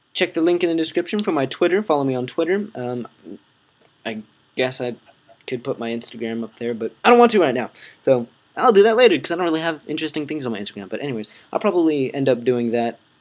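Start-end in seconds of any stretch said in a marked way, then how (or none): 8.0-10.9 very fast, rattled-off rambling. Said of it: "right now I'm talking really fast".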